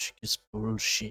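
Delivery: breathy whisper, under the breath. Speaker hearing their father's voice in their head, imitating a whisper. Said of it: "my father in the head just whispering".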